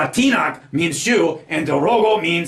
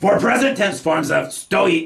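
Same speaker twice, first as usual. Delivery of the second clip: ordinary talk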